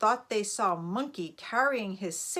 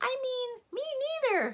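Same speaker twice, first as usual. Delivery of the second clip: tiny, very high squeaking mouse voice. A narrator reads the mouse speaking up after the boars, in a tiny little voice. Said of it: "said a tiny little voice".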